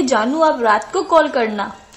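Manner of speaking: plain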